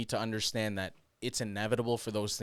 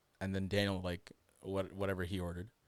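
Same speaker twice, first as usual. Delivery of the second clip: ordinary delivery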